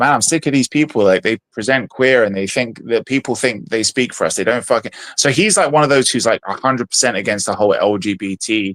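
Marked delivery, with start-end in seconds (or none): none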